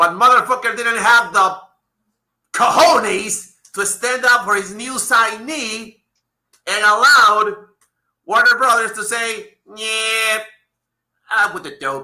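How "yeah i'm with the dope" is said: deliberately bad cartoon voice. Imitating a company telling the wrestler off: worst Bugs Bunny impression. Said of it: "my worst Bugs Bunny impression ever".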